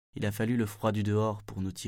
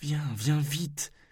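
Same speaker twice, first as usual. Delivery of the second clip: high, urgent pleading voice; 6 semitones higher than usual. A narrator reads the first-person storyteller's line, begging. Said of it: "ai-je supplié".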